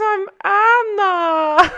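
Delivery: put-on German accent, high-pitched. Showing listeners the accent on a girl that made you laugh, imitating how Anna talks. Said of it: "I just want to talk like this".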